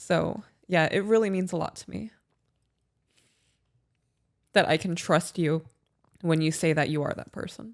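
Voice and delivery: crying while talking. Speaking to the other speaker about trusting them, crying while talking. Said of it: "I hate that you cry".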